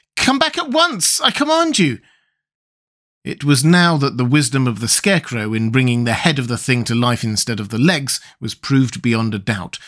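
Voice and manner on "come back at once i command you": very high, scared, frightened cry. Tip, clinging to a chimney, calls after a thing flying off; frightened cry. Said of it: "cried Tip in a frightened voice".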